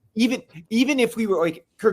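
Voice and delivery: high, fast, fired-up rant. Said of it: "I'm so fired up".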